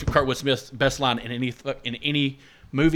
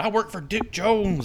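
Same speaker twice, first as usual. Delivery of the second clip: put-on high screaming, stretched out long; 8 semitones higher than usual. Retelling a movie scene: imitating someone screaming. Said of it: "the whole time he's screaming".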